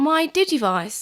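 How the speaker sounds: put-on New Zealand accent throughout. Reading a story aloud, voicing the boy's line in a new zealand accent. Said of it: "Why am I giving it a New Zealand accent?".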